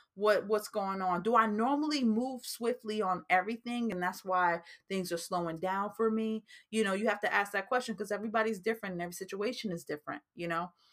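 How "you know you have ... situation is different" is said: rapid-fire, very fast talk. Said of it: "I feel like I'm talking really fast today".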